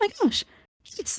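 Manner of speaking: very high, peppy, really upbeat voice. Demonstrating your typical character voice for your family tree of halflings, really peppy, upbeat halfling voice. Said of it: "a really peppy, upbeat".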